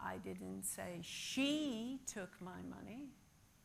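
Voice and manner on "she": 'she' emphasized. Stress drill repeating one sentence, shifting the emphasis each time: stress on 'she'. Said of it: "Maybe it was somebody else".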